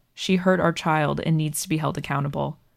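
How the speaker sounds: ordinary talk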